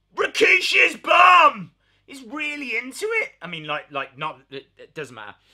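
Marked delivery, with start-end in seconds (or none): 0.2-1.8 very high, loud, enthusiastic, passionate yell. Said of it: "He's like".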